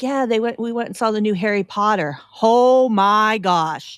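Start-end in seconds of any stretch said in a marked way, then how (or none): 0.0-2.2 mock eager, excited kid voice, blurting and gushing. Retelling what a kid said after the movies: imitating an excited kid. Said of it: "he was all excited and he was like".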